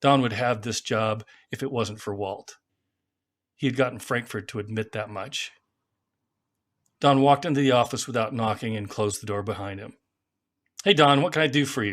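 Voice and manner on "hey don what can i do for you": patronizing, condescending, higher and louder. Someone walks into the office unannounced and shuts the door; patronizing tone. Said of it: "Walt said in a patronizing tone of voice".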